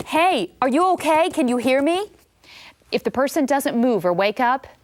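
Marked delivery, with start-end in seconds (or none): 0.1-2.1 loud, pitched-up calling out. CPR lesson, checking on a collapsed person: shouting to wake someone. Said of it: "Gently tap the person and shout".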